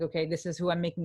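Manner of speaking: ordinary talk, nothing marked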